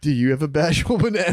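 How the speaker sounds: put-on giggly, giggling voice. Retelling what he said while shirtless in a cafe, retelling own giggly line. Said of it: "the whole time I was laughing".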